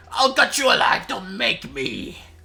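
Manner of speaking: very high, shrill, swooping, enraged goblin voice. Speaker voices the goblin in the story, as a really mad goblin. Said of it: "the goblin seems to be really mad".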